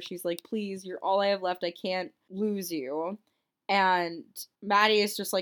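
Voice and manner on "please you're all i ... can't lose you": ordinary delivery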